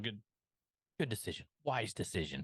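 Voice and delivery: put-on condescending tone. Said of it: "very condescendingly".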